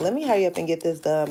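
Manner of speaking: ordinary delivery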